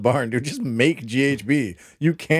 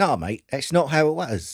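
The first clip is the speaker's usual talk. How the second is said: put-on London cockney accent with twang. Imagining what some australian parents would say, a speaker slips into a cockney accent. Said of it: "I went all cockney".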